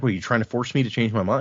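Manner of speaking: ordinary talk, nothing marked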